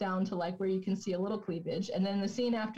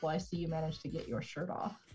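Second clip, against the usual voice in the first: mock-sarcastic put-on voice, quieter; 4 semitones lower, 5 dB quieter than usual. Retelling a movie scene as a shirtless man returns to the ship: sarcastic Alan Rickman impression. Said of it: "very sarcastic and like".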